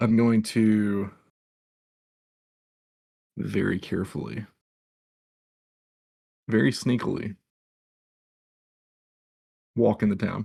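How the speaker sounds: sarcasm running through every word. Describing what the character does this morning, answering a question: sarcastic. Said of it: "That was more sarcastic than anything".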